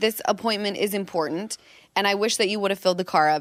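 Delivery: normal talking voice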